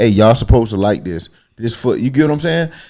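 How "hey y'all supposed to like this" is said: usual speaking voice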